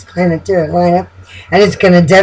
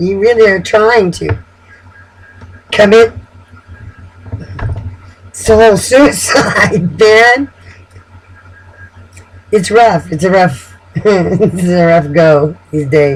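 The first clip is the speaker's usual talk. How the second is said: talking while giggling through the words. Commenting during a reading, giggling while talking. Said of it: "I'm sorry I'm giggling".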